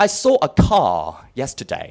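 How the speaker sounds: British English accent, sing-song. The speaker compares accents, saying a sample sentence in a British English accent. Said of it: "British English".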